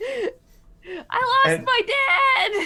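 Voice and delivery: very high, very slow, drawn-out in-character yell. Voicing a lost child in a scene: yelling in character. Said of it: "Start yelling".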